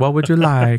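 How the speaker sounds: put-on older woman's Italian accent. Retelling what an older deli lady asked: Italian accent. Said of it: "she's got an Italian accent".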